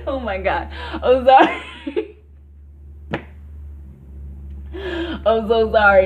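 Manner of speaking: talking through laughter. Apologizing for a sudden laughing fit: laughing while talking. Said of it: "I was laughing".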